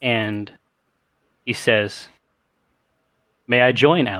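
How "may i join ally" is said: deep, full, rich barrel-chested voice from the chest. Voicing a stranger asking to join the fight: deep, rich barrel-chested voice. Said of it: "a deep, rich voice issuing from a barrel chest".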